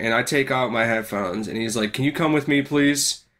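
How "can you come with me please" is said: mock insistent, urgent, pressing tone. Retelling a security guard asking him to leave class: imitating an urgent request. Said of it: "he said that, like, urgently".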